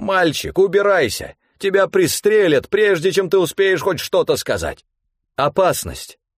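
very high, ringing shout at full voice. Narrator reads a character's warning to a boy, ringing full-voice shout. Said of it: "Во весь голос звонко крикнула".

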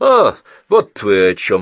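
contemptuous. A woman answers a question about a doctor, contemptuously. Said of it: "презрительно сказала Берил".

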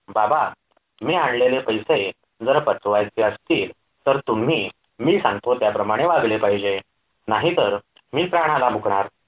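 ordinary delivery

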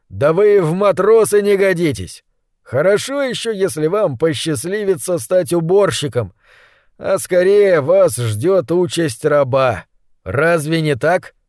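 ordinary delivery

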